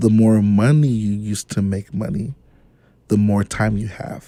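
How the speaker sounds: slow, deliberate, slowed right down. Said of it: "say it again, but say it slow".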